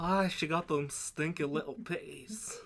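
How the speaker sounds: put-on Scottish accent. Joking about game characters, doing a line in a put-on scottish accent. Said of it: "Make 'em a little Scottish".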